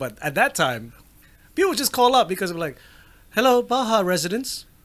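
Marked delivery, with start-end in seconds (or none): 3.3-4.6 mock youthful British accent. Retelling answering the home phone as a child: imitating his childhood British accent. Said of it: "it was British accent".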